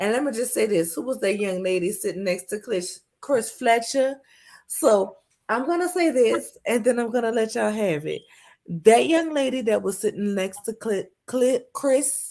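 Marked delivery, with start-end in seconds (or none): 8.8-12.3 stumbling, tongue-tied, with false starts on a name. Addressing the audience while wearing braces, tongue-tied stumbling. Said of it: "the braces really ties my tongue".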